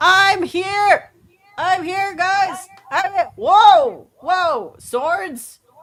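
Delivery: shrill, very loud, high-pitched yelling at full volume. Interrupting everyone in the scene, Synex yelling at the top of his lungs. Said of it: "voices of Synex yelling at the top of his lungs".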